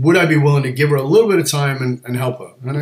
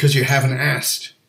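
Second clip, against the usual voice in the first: ordinary delivery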